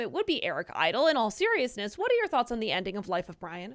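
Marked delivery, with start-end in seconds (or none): none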